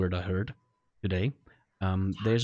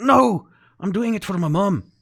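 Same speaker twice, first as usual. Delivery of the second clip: put-on sudden very high, slow Scottish accent; 10 semitones higher, 7 dB louder than usual. Voicing a character who refuses to be untethered: Scottish accent. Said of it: "he's turned Scottish all of a sudden".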